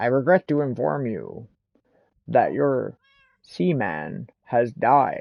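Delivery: bad, very slow, deliberate voice, words dragged out. Quoting the game's announcement of a dead pet: Leonard Nimoy impression. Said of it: "my best Leonard Nimoy impression".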